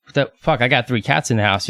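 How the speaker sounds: ordinary talk, nothing marked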